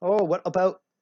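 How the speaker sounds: terrible put-on Canadian accent. Acting out two Canadians deciding what to call something, in a bad Canadian accent. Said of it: "it's a terrible accent".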